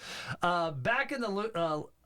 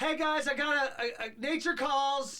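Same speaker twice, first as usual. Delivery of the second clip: put-on yelling, higher; 8 semitones higher than usual. Retelling a movie scene where a character announces to the crowd: imitating a character yelling. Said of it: "She just yells".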